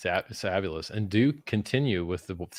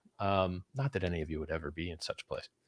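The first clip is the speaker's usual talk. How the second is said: usual speaking voice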